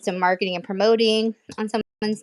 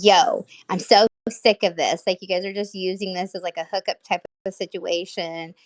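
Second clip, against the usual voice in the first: plain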